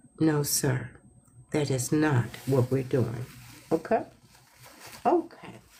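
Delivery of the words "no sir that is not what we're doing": kinder, gentler, lowered voice. Showing how to answer without raising your voice: kinder, gentler voice. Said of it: "Find your kinder and gentler voice to say".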